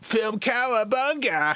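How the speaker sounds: cartoon turtle voice. Thanking a viewer from chat, the speaker says it in a Ninja Turtle voice. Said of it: "I'm gonna do it in my best Ninja Turtle voice".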